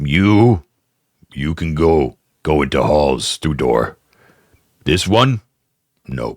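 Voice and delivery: ogre character voice. Voicing an ogre who lets the goblin in: ogre voice.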